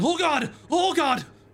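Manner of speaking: very high, panicked, scared yelling cries. Voicing a dwarf running for their life out of the darkness: yelling. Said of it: "they are just yelling".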